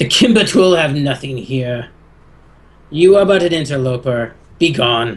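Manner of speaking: dragon voice, fully in character. Voicing a dragon who orders an intruder away: dragon voice. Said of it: "Narthalon replies".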